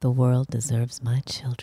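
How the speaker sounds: low, soft, seductive and sultry voice. Asked to say the phrase again real sexy: sexy voice. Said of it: "but like real sexy".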